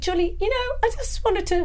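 voice lifting slightly. Retelling what he said to Julie: voice going a little high. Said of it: "My voice went a little high".

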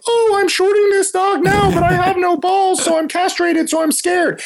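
very high, timid cartoon mouse squeak. A stock trader teaching students about short selling, Mickey Mouse voice. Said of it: "I use like a Mickey Mouse voice".

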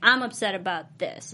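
ordinary talk

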